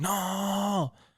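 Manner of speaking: high, mild mock yell, screaming.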